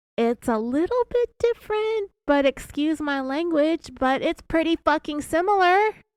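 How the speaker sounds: very high, oddly pitchy voice. Speaker retells Sherry talking to Keith, in a very high pitchy voice. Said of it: "in this very high pitchy voice".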